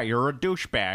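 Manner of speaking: put-on American accent. Quoting Doctor Strange calling Tony Stark a douchebag, in a put-on American accent. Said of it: "because I'm using my American accent".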